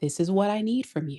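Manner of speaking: composed, calm, level, even voice. Showing Leo how the line sounds in a calm voice. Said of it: "This is in a calm voice".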